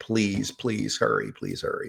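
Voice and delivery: tearful, pleading, begging voice. Recalling begging the nurses to hurry, acting out the past self: retelling tearful begging. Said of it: "I would literally be crying".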